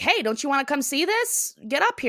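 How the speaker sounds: light, mild called-out yell. Retelling a scene where someone yells down a hill: imitating someone yelling down. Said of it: "Cotton yells down".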